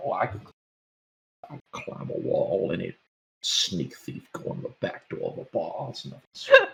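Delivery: whispered muttering under the breath. A narrator voices a heroics-loving character leaning against the alley, mumbling to himself. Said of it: "like mumbling to himself".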